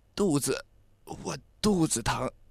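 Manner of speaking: faint, feeble, hushed, very slow, strengthless voice. A narrator reads a boy clutching his stomach telling his friend, weak, feeble voice. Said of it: "有气无力地说".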